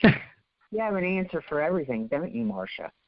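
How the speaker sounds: mock tone of total disgust, accusing. Retelling what Gaydana used to say: imitating Gaydana's disgusted tone. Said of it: "in a disgusted tone".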